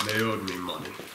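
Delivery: low, soft, gruff growling monster voice.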